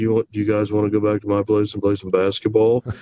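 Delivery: low, deep, enigmatic, mysterious voice. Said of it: "in this you know deep mysterious voice".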